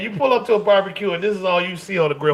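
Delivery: ordinary talk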